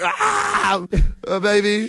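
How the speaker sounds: play-acted frightened, caught-off-guard voice, high and swooping. Retelling what the recording plays when pressed: imitating his own scared voice. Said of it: "I sounded scared".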